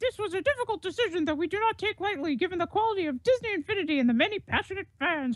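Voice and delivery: squeak pitched as high as possible. Reading out Disney's statement aloud, in a Mickey Mouse voice. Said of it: "I really want to do a Mickey Mouse voice".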